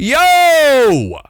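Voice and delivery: mock sharp, loud shout, very high pitched. Retelling a moment in a locked bathroom stall: yelling Yo. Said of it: "Like that".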